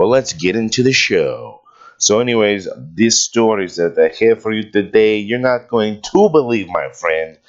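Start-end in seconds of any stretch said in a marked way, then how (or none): 2.9-7.3 horrible, bad put-on Russian accent. A show host introduces today's stories to the audience in a horrible attempt at a Russian accent. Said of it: "my horrible attempt at a Russian accent".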